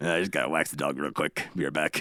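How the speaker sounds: put-on very low, creepy old-man voice with a drawl. Joking about what a nasty old man would say, in a creepy old man voice. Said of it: "creepy old man voice".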